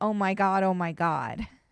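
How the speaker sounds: ordinary talk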